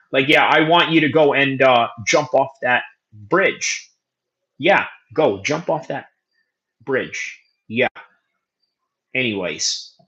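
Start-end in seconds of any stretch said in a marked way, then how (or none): 0.3-7.9 dead-serious, completely matter-of-fact tone. Imitating David Allen giving an opponent instructions: David Allen deadpan serious. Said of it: "say it to you with a serious face like this".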